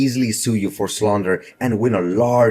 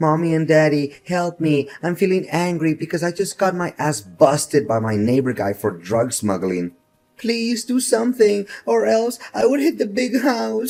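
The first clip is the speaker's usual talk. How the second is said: put-on high, swooping, whiny crybaby voice; 7 semitones higher than usual. Mocking the other speaker in a quarrel: mocking whining like a baby. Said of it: "Why don't you come crying to your mom and dad".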